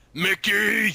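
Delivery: high, commanding, bossy voice. Trying the boss's line again after asking how he sounds: boss voice. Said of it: "that's the boss".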